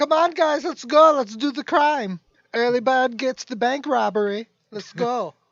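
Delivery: peppy, very loud, upbeat hype, acted out. Retelling what an upbeat gangster used to say, imitating an upbeat pep talk. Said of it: "It's because he was very upbeat".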